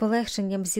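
plain reading voice

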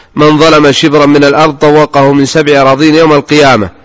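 ordinary talk, nothing marked

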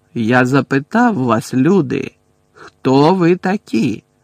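rough, rude, loud and slow. A centaur repeats his question to the humans, rude. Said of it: "грубо повторив Магор'ян".

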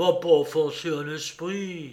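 usual speaking voice

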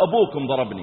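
ordinary delivery

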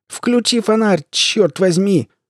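shrill, high-pitched, pained yell. Reading a story, a man hurt in an overturned van yells: yelling in pain. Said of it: "орал Билл, корчась от боли".

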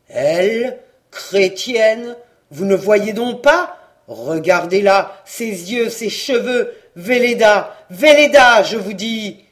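very loud, thundering growling outburst. The priest rejects the plea made for the young woman, growling. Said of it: "Mais le curé gronda".

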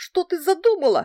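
very high, loud, squeaky voice. Frightened Vasily, confronted by the narrator, squeaks in an unexpectedly high voice. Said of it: "пропищал он неожиданно высоким голосом".

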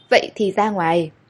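ordinary delivery

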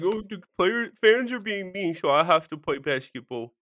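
put-on whiny, helpless, grown-up baby voice. Speaker mocks a basketball player criticized for missing the Denver game, Andy Bernard mock baby voice. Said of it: "I was trying to do a baby".

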